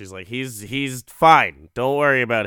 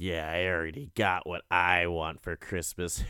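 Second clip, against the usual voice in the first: mock very quiet, low, hushed, ominous menace; 5 semitones lower, 10 dB quieter than usual. Retelling a mother answering her little girl at bedtime; mock-menacing. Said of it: "all menacingly just looking off into the distance".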